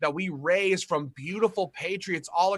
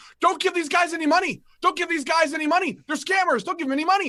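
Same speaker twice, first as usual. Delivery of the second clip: put-on shouting, pitched way up, repeated; 10 semitones higher, 5 dB louder than usual. Retelling putting a camera in a man's face, imitating his shouting. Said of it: "And he starts shouting".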